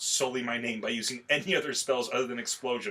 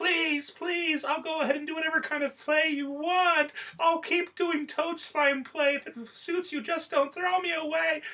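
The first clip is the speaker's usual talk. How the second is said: put-on screaming, much higher pitch. Recounting a scene where she begs Cosmo, imitating Megumin screaming a desperate plea. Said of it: "And then she starts screaming".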